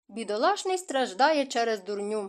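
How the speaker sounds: ordinary delivery, nothing marked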